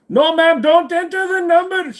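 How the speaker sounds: loud, high put-on Indian accent. Acting out a bit for a listener, in an Indian accent. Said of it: "your Indian accent is hilarious".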